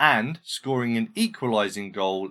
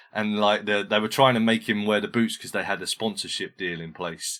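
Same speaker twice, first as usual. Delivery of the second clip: ordinary talk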